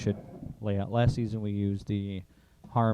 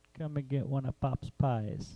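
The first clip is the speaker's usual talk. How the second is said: questionable, attempted Italian accent; 4 semitones higher, 5 dB quieter than usual. Pitching a pizza-shop slogan, the speaker tries an attempted Italian accent. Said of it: "Was that supposed to be an Italian accent?".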